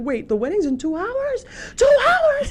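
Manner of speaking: high, loud panicked scream in disbelief.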